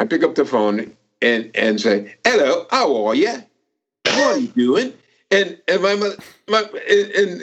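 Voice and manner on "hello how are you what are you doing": phony, put-on British accent. Retelling answering the phone as a kid: put-on British accent. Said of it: "I used to do a British accent".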